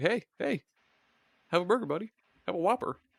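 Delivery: sinister, creepy, high, sweet-talking mascot voice. Speaker imagining the mascot sneaking up behind someone with a shiv: mock-creepy Burger King voice. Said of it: "sneaking up behind you and he's got like a fucking shiv".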